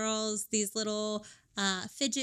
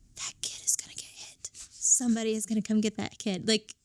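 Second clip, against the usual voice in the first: put-on whisper. Retelling what a partner said during a church sermon: imitating someone whispering. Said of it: "whispering to me".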